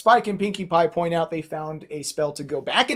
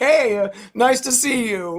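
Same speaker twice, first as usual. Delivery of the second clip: breezy, nonchalant and unbothered, pitched up; 7 semitones higher, 3 dB louder than usual. Retelling a scene where Princess Celestia walks by: nonchalant Celestia voice. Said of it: "totally nonchalant and just like".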